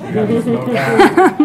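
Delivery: high, loud, slow mock pleading voice.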